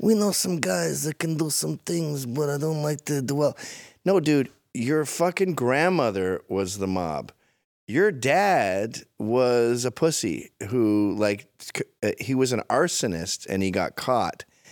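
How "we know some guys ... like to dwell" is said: put-on New York tough-guy voice, pitched higher. Mocking how two brothers act tough: Cuomo brothers New York act. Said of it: "do that New York thing where they're like".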